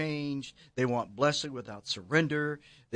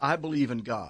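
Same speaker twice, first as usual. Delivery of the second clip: ordinary delivery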